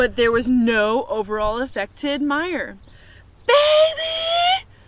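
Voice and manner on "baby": very high, shrill, stretched-out, drawn-out scream. Reading a story, a woman finds the flowers gone and screams for her sister. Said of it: "screamed Eugenia".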